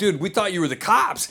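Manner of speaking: usual speaking voice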